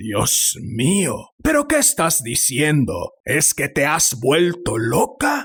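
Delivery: aghast, horrified, swooping voice full of disbelief. Narrator voices an old man answering an old woman, horrified exclamation. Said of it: "el anciano se sentó en la cama y tras arrojar a un lado las mantas se llevó las manos a la cabeza. / el anciano se sentó en la cama y tras arrojar a un lado las mantas se llevó las manos a la cabeza".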